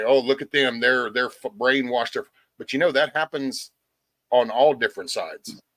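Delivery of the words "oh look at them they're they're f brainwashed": plain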